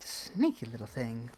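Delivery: grumbling remark muttered to herself. Voicing a character in a game scene: muttering under her breath. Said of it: "mutter under her breath".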